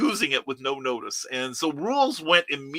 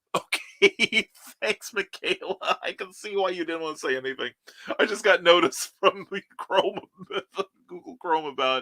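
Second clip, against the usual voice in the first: speaking while laughing throughout; 4 semitones higher than usual. Reacting to a message in the middle of a story, laughing while talking. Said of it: "I'm laughing".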